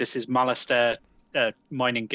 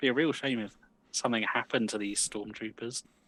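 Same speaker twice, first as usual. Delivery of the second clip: quiet, hushed half-whisper; 6 dB quieter than usual. Leaning over to the others in character: half-whispering. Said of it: "lean over and whisper to the others".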